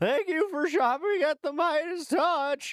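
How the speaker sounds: put-on high teenage voice cracking upward. Mocking a commentator's voice as it cracks like a teenager: Ben Meiselas voice cracking like a teenager. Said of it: "he starts cracking like a teenager".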